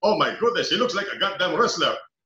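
put-on exclaimed loudly in an Indian accent. Retell what someone in the room said as you came in, in a booming Ronnie Nathaniels voice, Indian tone. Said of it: "I just heard a booming voice say".

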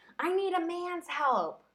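very high, deliberate, drawn-out shouted delivery. Retelling a man yelling at a neighbor: imitating someone yelling. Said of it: "Martin yelled at her saying".

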